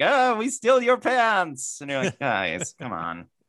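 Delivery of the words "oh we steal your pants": fake Eastern European accent, high-pitched. Mocking how some weird Eastern Bloc people talk: fake Eastern European accent. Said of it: "weird Eastern Bloc people".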